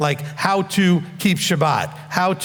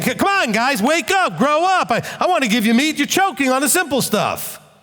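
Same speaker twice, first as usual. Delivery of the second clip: acted, pushy, confrontational, pitched-up, in-your-face delivery; 7 semitones higher than usual. Retelling Paul pushing his readers to grow up, imitating Paul in their face. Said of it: "getting in their face and saying".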